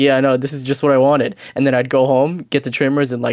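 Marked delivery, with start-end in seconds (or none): none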